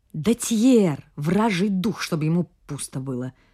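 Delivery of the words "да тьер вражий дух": ordinary delivery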